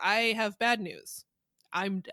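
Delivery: mock flat monotone delivery. Retelling a bad reenactment actor's line, imitating a monotone delivery. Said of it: "He's so monotone".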